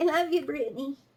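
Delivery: high sheep voice with bleat. Retelling something they said earlier, in a sheep voice. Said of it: "in the sheep voice".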